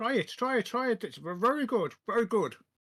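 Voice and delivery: talking with mouth full. A player voicing their companion offers food, talking with mouth full. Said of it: "With my mouth partially full".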